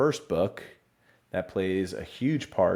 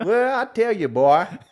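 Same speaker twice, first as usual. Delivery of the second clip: shrill, booming, high, loud put-on Louisiana accent; 14 semitones higher, 9 dB louder than usual. Rehearsing a line, the speaker jokes about slipping into an accent: Louisiana accent. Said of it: "Why am I turning into like a Louisiana accent?".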